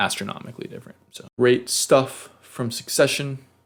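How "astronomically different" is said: fast, hushed, emphatic whisper.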